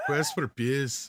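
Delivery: bad put-on Scottish accent. Saying the joke title in the accent the group asked for: bad [name] Scottish accent. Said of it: "accent is that?".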